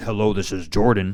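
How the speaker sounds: loud, commanding, self-assured, super authoritative voice. Showing how Javian sounds on the phone: super authoritative phone voice. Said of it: "We don't all sound like Javian on the phone".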